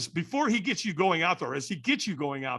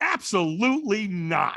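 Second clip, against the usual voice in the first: blunt, point-blank, outright flat tone; 4 semitones higher, 3 dB louder than usual. Retelling refusing to walk when asked, reenacting own refusal tone. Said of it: "I said it about that tone".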